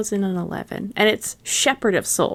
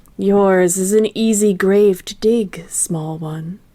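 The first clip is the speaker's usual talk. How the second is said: lowest possible deep put-on character voice; 5 dB louder than usual. Doing what a game character says on seeing a yordle, low character voice. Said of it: "That's as low as I get".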